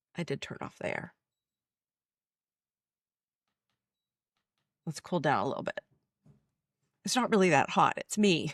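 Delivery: talking through held-back tears. Talking on camera about a past nightmare, holding back tears. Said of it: "I'm just trying not to cry".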